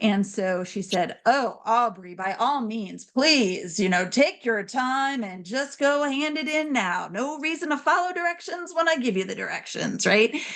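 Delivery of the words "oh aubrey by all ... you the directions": mock sarcastic teacher voice, dripping sarcasm. Retelling what a teacher said to a student: imitating the teacher's sarcasm. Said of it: "part of hers is to use some sarcasm".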